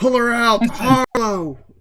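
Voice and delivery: shouting in a put-on character voice. Playing a character in a fight, urging an ally to pull someone out: in-character shout. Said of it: "I'm shouting, like".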